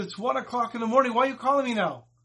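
very upset, complaining man's voice. Retelling a man woken by a late call: imitating an upset man. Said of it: "Rav David was very upset".

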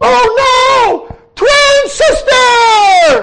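very high, loud, drawn-out scream, oh stretched. Telling a story, the speaker acts out a man at the door: retelling a scream. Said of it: "and he screams".

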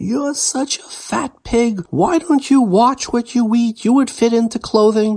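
very high, shrill, piercing, top-of-lungs scream. Retelling a scene in a store where a mother screams: imitating a woman screaming. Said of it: "screaming at the top of their lungs".

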